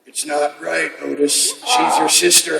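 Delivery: soft, slow, rough, creaky voice. Quoting a line from a movie for another speaker: Henry impression. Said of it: "can I do a little Henry for you?".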